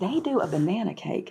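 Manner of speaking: dropped, confidential tone. Telling listeners about New Albany food spots, in a lowered voice. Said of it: "Do you see how I'm getting lower? Like I'm like lowering my voice".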